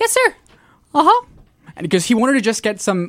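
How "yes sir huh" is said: voice jumping up very high. Retelling answering a supervisor who came by, voice switched to a high pitch. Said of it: "my voice completely switched over to this high pitched voice".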